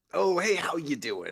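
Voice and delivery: put-on high, loud rat character voice. In a role-playing game, a player greets the roadside rats: put-on rat voice. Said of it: "I'm gonna do your voice if you do that voice".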